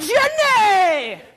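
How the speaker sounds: lively exclaimed call, very high and very loud. Showing a group how to say a name for them to mirror: exclaimed name. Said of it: "You kinda have to do it the same way".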